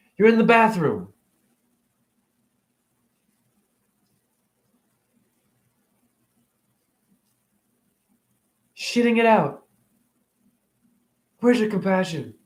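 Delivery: emotional, choked voice. Ranting about eating animals, asking where people's compassion is: getting emotional. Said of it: "I'm getting emotional".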